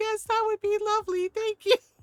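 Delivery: high, loud, tearful sobbing through polite speech. Retelling answering an offer to open a jar, imitating own crying. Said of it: "And I'm still crying".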